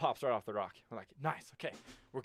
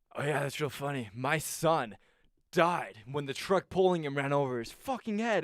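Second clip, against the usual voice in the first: play-acted, raised, abruptly dead-serious tone; 2 semitones higher, 5 dB louder than usual. Retelling what an old man in a car said: imitating someone turning serious. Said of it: "he gets all serious and goes".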